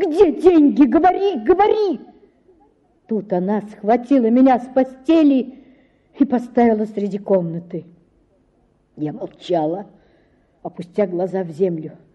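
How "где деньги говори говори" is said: shrill, sudden, very high-pitched yell. Narrator reads the mother confronting her daughter, shouting. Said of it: "закричала вдруг матушка".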